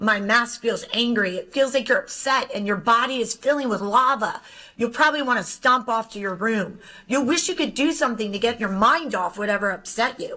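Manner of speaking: usual speaking voice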